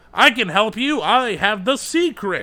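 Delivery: theatrical, booming salesman bravado. Demonstrating how a timeshare or car salesman talks: salesman bravado. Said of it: "they all give that bravado".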